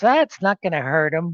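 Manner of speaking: put-on grandmother voice with Yiddish-inflected accent.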